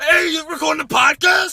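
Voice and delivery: very high, very loud, shrill screamy yell. Podcast hosts doing their Hey Tony voices; screamy put-on Tony Brothers voice. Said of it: "It's very screamy".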